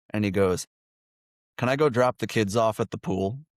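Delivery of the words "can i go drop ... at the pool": plain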